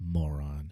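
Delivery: very low, muttered under-the-breath aside. Retelling how a character leaves a room: Sarah Michelle Gellar muttering under breath. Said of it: "under her breath just go".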